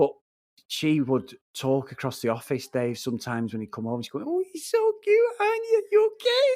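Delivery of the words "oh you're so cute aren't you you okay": very high, squeaky put-on chipmunk cartoon voice. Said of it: "almost like Alvin and the Chipmunks voice".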